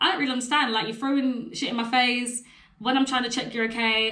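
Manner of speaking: ordinary talk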